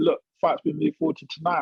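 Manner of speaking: plain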